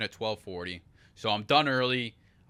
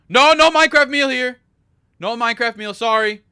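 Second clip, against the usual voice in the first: high-pitched, very loud, shrill, blaring delivery; 12 semitones higher, 15 dB louder than usual. Retelling quietly ordering the minecraft meal and the lady's reply, imitating a lady talking loudly. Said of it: "dude, keep your voice down".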